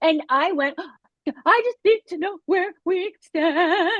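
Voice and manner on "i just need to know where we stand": play-acted crying, tearful and pitched-up. Recounting what you said to him the first time, retelling own tearful words. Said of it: "cry the whole time".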